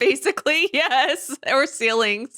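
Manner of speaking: talking through laughter. Answering another speaker about a ruined building: laughing while talking. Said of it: "I'm laughing".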